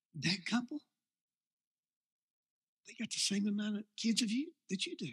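acted devilish whisper. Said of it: "All he whispers".

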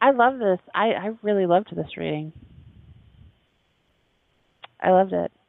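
sarcastic tone. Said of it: "Don't you love sarcasm?".

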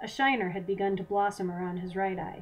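plain reading voice

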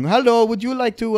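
put-on very high-pitched Indian accent. Complaining about telemarketing calls, the speaker imitates a caller: indian accent impression. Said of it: "I don't know why I went straight to Indian".

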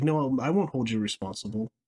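ordinary delivery

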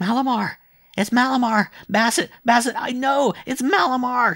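very high, very loud crying out. A child with brain fever, his mother by his side: delirious child crying out. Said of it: "So the child cried".

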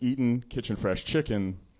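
ordinary delivery

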